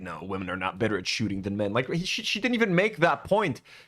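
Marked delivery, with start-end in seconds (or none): 0.0-1.7 huffy, offended, defensive, cutting in. Retelling how someone cut another speaker off: imitating someone offended. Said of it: "He gets so offended".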